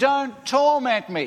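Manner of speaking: very high, loud, begging, pleading yell. Speaker retelling a demon-possessed man running to Jesus, acting out a pleading yell. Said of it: "this guy runs to Jesus pleading".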